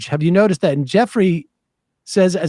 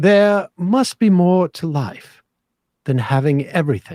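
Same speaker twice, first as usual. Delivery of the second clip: put-on British accent, reading aloud. Reading aloud an imaginary conversation written as a note; British accent. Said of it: "I'll read in a, a British accent".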